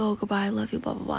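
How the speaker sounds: normal talking voice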